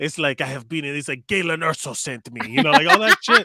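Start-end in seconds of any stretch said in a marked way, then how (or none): 0.4-2.5 put-on Mexican accent. Joking about accents in a movie, doing a Diego Luna impression. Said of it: "That's such a great impression of him".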